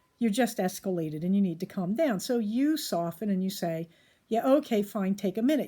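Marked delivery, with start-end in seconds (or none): 4.3-5.7 mock grudging, reluctant tone. Speaker acts out the other person's reply during a heated conflict: mock-grudging reply. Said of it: "not say it in the most lovable tone".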